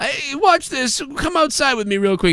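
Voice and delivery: insistent, pushy tone.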